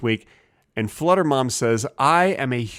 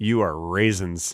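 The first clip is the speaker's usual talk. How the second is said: mock disgusted tone, lower; 5 semitones lower than usual. Acting out talking to a bag of raisins: imitating a disgusted tone. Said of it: "I didn't say it in that tone".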